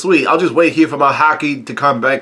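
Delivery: ordinary talk, nothing marked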